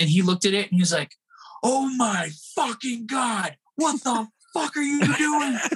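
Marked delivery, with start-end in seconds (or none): 1.6-5.6 furious angry outburst, pitched up, drawn out. Retelling how Don reacted when asked about the pipe: imitating Don's angry outburst. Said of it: "He was just so angry".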